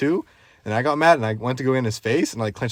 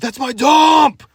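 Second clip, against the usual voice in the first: very high, very loud, shrill overreacting yell; 14 semitones higher, 9 dB louder than usual. Telling a story about an angry man, imitating him freaking out. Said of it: "Like overreacting for throwing mattress in his dump".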